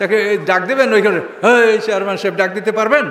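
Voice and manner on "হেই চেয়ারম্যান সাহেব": ordinary talk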